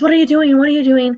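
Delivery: high, loud yelling.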